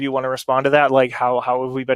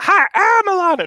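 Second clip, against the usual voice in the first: terrible, very high, loud, squeaky put-on voice; 5 dB louder than usual. Introducing oneself as another person: Alana impression. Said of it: "I'm doing a terrible Alana".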